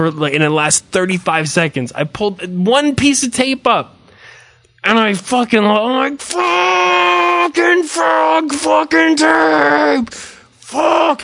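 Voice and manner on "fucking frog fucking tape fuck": put-on very high, shrill cursing through clenched teeth. Retelling cursing at tape while painting the house, in a teeth-clenched curse. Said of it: "the type of fuck that you say with your teeth clenched".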